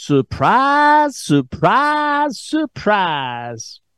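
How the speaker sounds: phony Southern accent, high and swooping. Radio host repeats his opening words, in a phony Southern Gomer Pyle accent. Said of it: "in my phony Southern accent, like Gomer Pyle".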